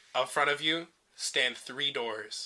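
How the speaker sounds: ordinary delivery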